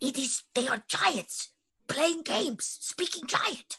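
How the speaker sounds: whispered, pitched high. Whispering back to the group about the giants: whisper. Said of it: "I whisper back".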